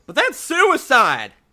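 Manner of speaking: very loud, very high, shrill protesting yell. A council squirrel objects to the speaker's request, yelling in protest. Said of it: "the lady that just yelled".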